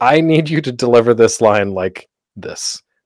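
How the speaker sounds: normal talking voice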